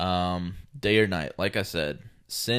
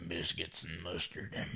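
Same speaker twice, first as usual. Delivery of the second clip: put-on Southern drawl, quieter; 2 semitones lower, 13 dB quieter than usual. Answering in the same bit: Carl from Sling Blade voice. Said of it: "just turned into Carl from Sling Blade".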